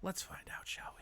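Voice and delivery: breathy, hushed, very quiet whisper. Asking the audience if they should find out together: whispering. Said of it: "Look at how I'm whispering".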